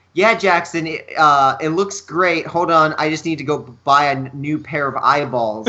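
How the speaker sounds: usual speaking voice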